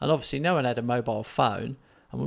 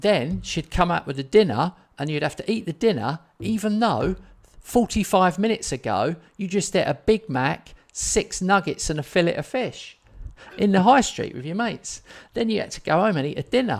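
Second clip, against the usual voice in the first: worked-up, carried-away rant, pitched up; 7 semitones higher, 3 dB louder than usual. Telling a long story to a listener, the speaker ends up getting worked up. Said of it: "I better calm down".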